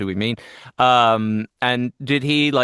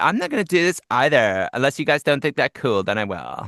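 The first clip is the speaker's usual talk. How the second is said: put-on cartoonish swooping sing-song valley-girl voice, pitch swinging; 3 semitones higher than usual. Imitating a cartoon character the other speaker voices. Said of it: "she sounds like that. She goes".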